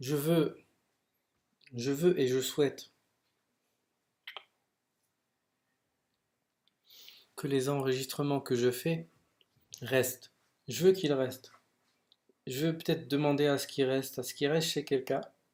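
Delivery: voice holding back tears, near crying. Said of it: "je voulais pas pleurer".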